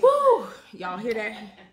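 out of breath, very loud, whooping shout. Mid-workout, calling out to the audience: out of breath. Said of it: "I'm out of breath".

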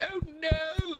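put-on very high-pitched voice with British accent vowels. Imitating another player's exclamation: imitating a British-sounding exclamation. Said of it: "it sounded so British, you're like".

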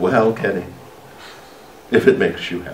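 put-on motherly voice with a sigh.

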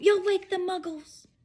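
hissed, pitched very high and sharp. Professor McGonagall hushes Hagrid after his howl, hissing. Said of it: "hissed Professor McGonagall".

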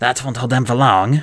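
said in a mutter. After bolting the door shut, the witch speaks to Sophie, muttered. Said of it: "she muttered".

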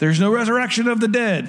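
mock insistent, heated tone. Retelling a temple dispute, the Sadducees yelling at the Pharisees: retelling Sadducees yelling. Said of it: "Sadducees are yelling".

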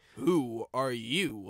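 low, pointed, accusing tone. A narrator reads a character questioning a newly arrived diesel, accusing. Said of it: "asked Toby accusingly".

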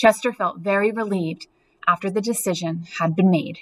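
ordinary delivery

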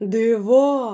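crying out, exclaiming. A bear tastes from the pot the wolf gave him, exclaiming. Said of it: "вигукнув він".

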